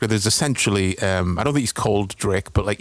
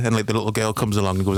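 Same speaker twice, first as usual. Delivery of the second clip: plain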